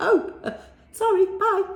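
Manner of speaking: flustered, hasty blurt, high-pitched, loud and hurried.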